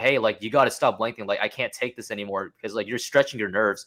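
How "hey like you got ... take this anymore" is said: ordinary delivery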